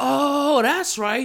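loud, high-pitched, surprised realization. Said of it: "I was like".

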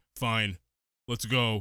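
very low, wooden, flat bad-actor monotone. Mocking a movie's bad acting, imitating the bully: deadpan bad acting. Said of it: "it's just very deadpan, and the bully's just like".

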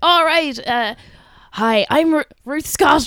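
put-on raspy Irish woman radio announcer voice. Showing how all radio women in ireland sound the same, in a raspy irish radio woman voice. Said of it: "they all have like really like raspy voice".

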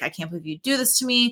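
sad, hurt, high, plaintive lamenting voice. Retelling Richard's reaction to hearing about the kiss: imitating Richard sounding sad. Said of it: "He was sad".

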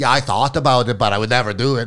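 put-on German accent. Retelling what a German friend replied: German accent. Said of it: "that German accent is on point".

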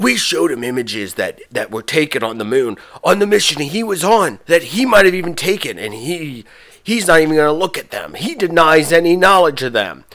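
narrator-style announcer delivery. Retelling what the announcer said about Buzz, mimicking the announcer. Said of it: "I'm going to do this voice every time I'm trying to mimic the announcer".

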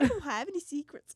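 put-on Minnesota accent. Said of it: "It's like Swedish".

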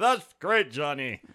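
very loud, high, belting TV announcer voice. Playing the co-host sidekick who answers Johnny: Ed McMahon voice. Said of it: "I'm your Ed McMahon".

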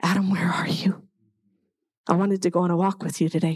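heavy-hearted, sorrowful, grief-filled voice. Retelling God calling out to Adam, acted-out grieving tone. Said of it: "I think he said it with grief".

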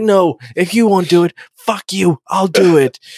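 mock angry outburst. Retelling a scene where a character gets angry: imitating a character getting angry. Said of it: "she gets really angry, really fast".

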